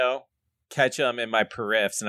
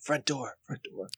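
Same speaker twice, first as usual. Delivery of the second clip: hushed, breathy whisper under the breath; 2 semitones higher, 9 dB quieter than usual. Speaker retelling pointing toward the front door: retelling a whisper. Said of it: "But I'm like whispering it".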